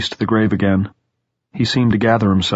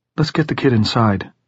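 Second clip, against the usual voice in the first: ordinary delivery, nothing marked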